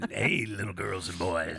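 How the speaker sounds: creepy radio DJ voice. Continuing the radio DJ imitation for the co-host: Wolfman Jack voice. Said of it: "I got that down".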